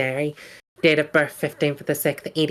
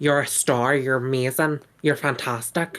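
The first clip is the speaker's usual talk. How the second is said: imitated Irish accent. Imitating a former boss going around the salon, in an irish accent. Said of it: "a boss that was Irish".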